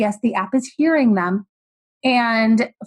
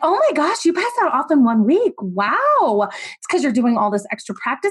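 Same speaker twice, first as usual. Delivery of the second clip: put-on, overdone gushing, laid on thick; 2 semitones higher than usual. Showing aggressively passive-aggressive praise as only a Southern woman can: mock-gushing praise, laid on thick. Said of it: "Aggressively passive aggressive. ... I lay it on really thick".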